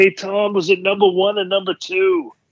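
mock, very high, loud yell. Retelling what a guy in the crowd yelled: imitating a guy yelling. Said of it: "then one guy yells".

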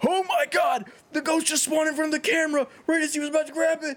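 acted, shrill, very high-pitched screaming yell. Retelling a friend's reaction heard over proximity chat in a game; imitating Josh screaming. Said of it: "My buddy Josh is like screaming like".

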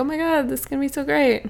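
put-on valley-girl style talk. Voicing characters in a story being told: valley girl voice. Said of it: "They suddenly talk like a Valley Girl?".

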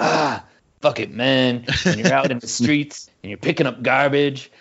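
dead-serious intense delivery. Retelling a skater's voiceover turning intense: imitating Bob Pulio going super intense. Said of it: "he goes super intense".

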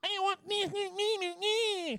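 put-on squeaky, very high baby babble. Speaker imitating the listener's imagined future baby, high-pitched baby voice. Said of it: "who will sound with a high-pitched voice".

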